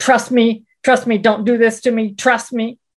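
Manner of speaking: put-on bellowing. Recounting a woman's reply after pointing out a form mistake: retelling her bellow. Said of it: "she bellowed".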